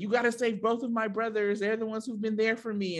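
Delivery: high, whiny, pleading tone.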